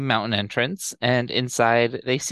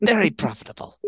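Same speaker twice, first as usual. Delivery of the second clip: higher-pitched space pirate voice; 5 semitones higher than usual. Recapping a story, redoing a line as Hondo might say it: Hondo voice. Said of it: "That was your Hondo voice immediately".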